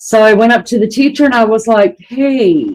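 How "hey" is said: put-on cute, innocent little-girl voice. Retelling greeting a teacher as a child: imitating own cute innocent little-girl voice. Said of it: "in my little girl, cute, innocent way".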